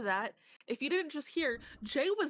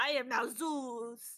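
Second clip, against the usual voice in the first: put-on French accent. Acting out Zeus deciding to become French: French Zeus voice. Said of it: "which is French Zeus".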